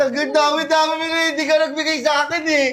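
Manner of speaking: high, tearful, crying voice. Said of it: "Huwag kang umiyak".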